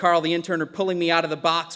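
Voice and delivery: ordinary talk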